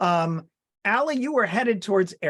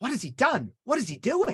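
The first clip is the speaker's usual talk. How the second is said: intent character voice whisper, higher pitch; 4 semitones higher than usual. Playing Mai, turning toward two companions mid-conversation, Mai's intent whisper. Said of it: "turn in your direction and whisper intently".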